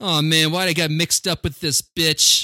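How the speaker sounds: whiny, complaining, cornered lowlife voice. Retelling a movie scene, quoting the whiny scumbag informant: imitating a whiny Hank Azaria. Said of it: "a whiny scumbag in this".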